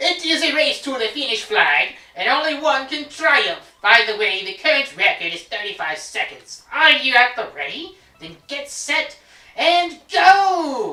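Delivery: put-on high Italian accent, "go" stretched. Player voicing the game character Il Piantissimo before a race, Italian accent. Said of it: "speaking with an Italian accent".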